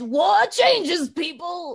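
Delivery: slow, loud, solemn, grim, war-weary soldier delivery.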